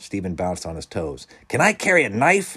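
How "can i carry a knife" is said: very high, shrill, eager, excited yelling. One of a group of kids reacts to being left on an island, yelling. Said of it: "Clarence yelled".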